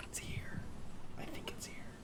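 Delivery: very quiet, hushed, breathy whisper, barely there. Pointing out a hidden nest to the party in character: quiet whisper. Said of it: "Did I whisper too quietly?".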